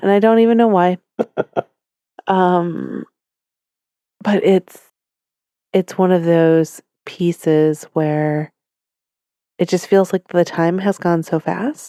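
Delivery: teary voice right on the edge of tears. Talking about a child turning sixteen this week, tearing up. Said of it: "I'm actually tearing up now".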